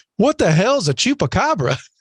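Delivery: high, slow, mocking St. Louis accent. Retelling what a concert-goer in Saint Louis said: imitating a St. Louis accent. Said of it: "this is exactly the accent that he had".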